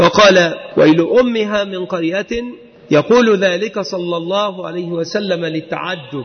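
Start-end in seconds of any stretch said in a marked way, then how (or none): none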